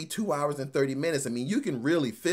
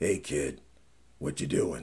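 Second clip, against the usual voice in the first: put-on very low, grizzled old man voice; 13 semitones lower than usual. Critiquing a film's young Indiana Jones scene, in an old grizzled Harrison Ford voice. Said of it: "this old grizzled man voice".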